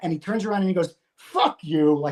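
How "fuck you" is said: put-on throwaway, dismissive, brushing-off tone. Retelling how a coworker turned and dismissed the speaker: imitating a dismissive "fuck you". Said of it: "he does one of those "fuck yous."".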